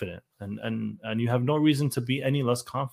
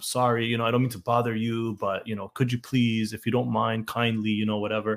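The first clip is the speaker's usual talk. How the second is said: put-on apologetic voice. Imitating people who ask for help: imitating an apologetic tone. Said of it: "this very apologetic tone".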